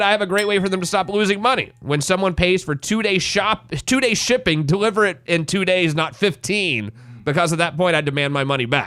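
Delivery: ordinary delivery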